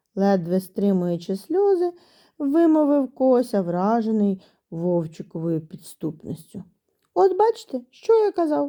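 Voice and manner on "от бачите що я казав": high, sharp, vindicated exclamation. The wolf cub answers the hare's accusation before the teacher, exclaiming. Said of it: "вигукнув вовчик".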